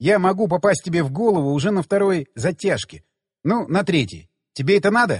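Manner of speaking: plain reading voice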